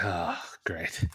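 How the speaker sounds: low, soft, resigned sighing voice.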